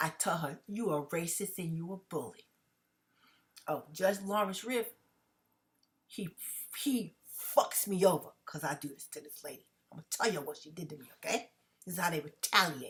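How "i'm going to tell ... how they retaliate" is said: heated, worked-up, angry, fast ranting delivery. Telling listeners how a judge retaliated against them, angry. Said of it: "I'm getting angry".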